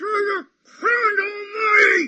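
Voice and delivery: put-on, very loud, very high terrified scream. Retelling a phrase a man used to scream, imitating a terrified scream. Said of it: "scream with the terror in his mouth".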